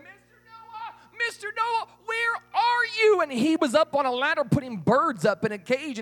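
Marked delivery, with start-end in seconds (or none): 0.0-3.2 very high, desperate screaming. Telling a story, the girl runs into the ark: screaming. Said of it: "she's screaming".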